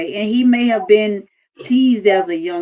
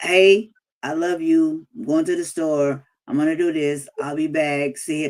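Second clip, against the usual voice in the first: flat, emotionless monotone, same level tone throughout; 3 semitones lower, 3 dB quieter than usual. Imitating how he talked in every conversation: imitating a monotone voice. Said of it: "his whole conversation was monotone".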